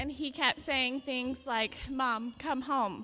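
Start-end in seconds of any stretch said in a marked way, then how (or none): 1.9-3.0 put-on sobbing, crying voice, louder. Retelling repeated phone calls begging mom to come home: imitating a sobbing plea. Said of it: "sob, sob".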